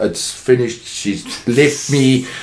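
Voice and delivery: ordinary talk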